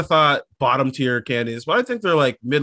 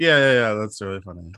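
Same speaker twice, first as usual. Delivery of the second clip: defeated tone, much lower; 4 semitones lower than usual. Conceding that something another person said is funny, sounding defeated. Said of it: "Defeated you sound when you had to say that".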